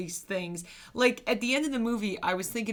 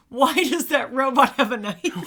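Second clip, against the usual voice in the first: very loud, full-throated scream; 4 semitones higher, 9 dB louder than usual. Retelling how the other viewer screamed at the end of the movie: imitating someone screaming.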